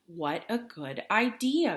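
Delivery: unruffled, calm, all-knowing tone. Reading a story aloud, voicing Fox's reply to Bear: calm, knowing Fox voice. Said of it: "I made Fox sound very calm and like he knew exactly what was happening".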